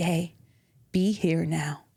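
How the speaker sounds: very slow, dead-serious, bad serious-man voice. Retelling what a serious man said while everyone fussed: bad impression of a serious man. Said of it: "It's a very bad impression of him".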